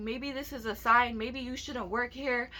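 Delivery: normal talking voice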